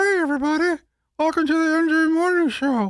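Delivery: ventriloquist voice with lips barely moving. Showing how the show could be done as ventriloquists: ventriloquist voice, lips barely moving. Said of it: "Your lips are moving".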